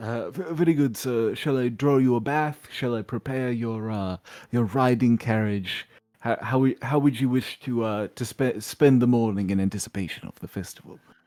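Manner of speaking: gentle, softened, halting, stammering butler voice. Voicing a servant who softens after an apology: softened servant voice. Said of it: "he softens and says".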